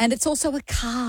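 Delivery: ordinary talk, nothing marked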